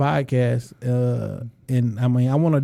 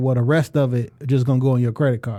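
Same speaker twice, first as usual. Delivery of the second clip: ordinary talk, nothing marked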